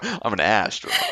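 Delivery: excessive, overdone, exaggerated Southern drawl. Imitating how the theme monologue says one line: imitating exaggerated southern accent. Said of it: "He accentuates his own".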